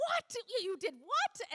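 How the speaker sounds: high, drawn-out, stammering, flabbergasted disbelief. Retelling the leaders' reaction to hearing about the bear: imitating flabbergasted leaders. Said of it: "all my leaders are flabbergasted".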